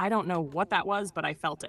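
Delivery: ordinary delivery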